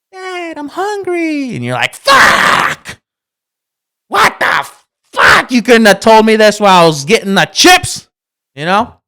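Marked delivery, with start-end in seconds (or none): 0.1-1.5 put-on very high, soft, little squeaky kid voice. Retelling a child calling out just as the dad sits down: little squeaky voice. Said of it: "just one one little squeaky voice".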